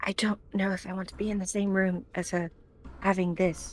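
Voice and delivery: secretive, hushed whisper close to the ear. Playing a character who leans close to another character: whispering. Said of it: "whisper in her ear".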